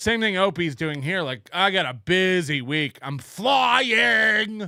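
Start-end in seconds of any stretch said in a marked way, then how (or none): 1.5-4.7 very slow, stretched long, self-important tone. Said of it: "He thinks if he says it like that".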